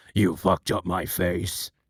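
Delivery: very low, slow, drawn-out voice. Answering a chat request with an impression: Mitchell impression. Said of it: "Do an impression of Mitchell from, uh, H D T F".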